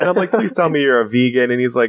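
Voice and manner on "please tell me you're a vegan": usual speaking voice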